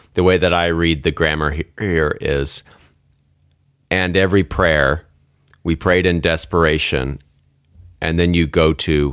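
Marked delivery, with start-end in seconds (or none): none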